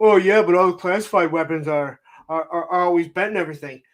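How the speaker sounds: scornful, derisive put-on nitpicking critic voice. Retelling a friend imitating people who complain: mocking imitation of someone. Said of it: "He imitates".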